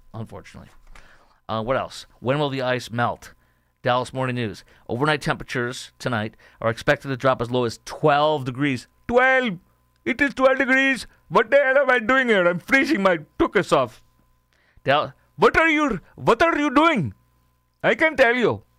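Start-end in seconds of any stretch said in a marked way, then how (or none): 9.0-18.3 very high-pitched put-on Indian accent. Reacting to a forecast of twelve degrees, in an Indian accent impersonation. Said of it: "That's my Indian impersonation".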